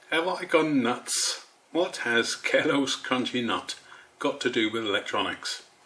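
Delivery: trying not to crack up, laugh held back. Opening a video to viewers, holding back a laugh. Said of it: "I'm trying not to laugh".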